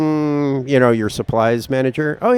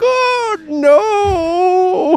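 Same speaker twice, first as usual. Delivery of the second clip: very high fake sobbing, drawn-out; 3 dB louder than usual. Retelling how a man under pressure started crying, imitating someone crying. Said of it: "then he starts like crying, like".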